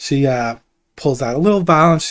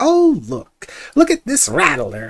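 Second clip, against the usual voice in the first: mocking imitated character voice, higher; 9 semitones higher than usual. Voicing a herbalist who imitates a visitor digging for snakes: imitating Thistle. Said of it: "you were digging in those holes and you were like".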